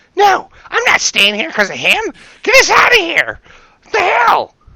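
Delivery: very loud, shrill, very high, swooping yell. Telling a story, voicing a woman below who starts yelling: retelling a woman yelling. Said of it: "she starts yelling".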